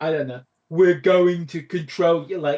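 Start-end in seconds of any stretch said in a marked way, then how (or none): 0.7-2.4 West Midlands accent. Imitating the alien's regional accent from the episode: West Midlands accent. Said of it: "is that the accent? The one where you go like this?".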